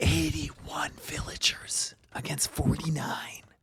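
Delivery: stage whisper in play-by-play commentary style. Commentating a match, noting one player's lead in villagers, whispering. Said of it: "I don't know why I'm whispering".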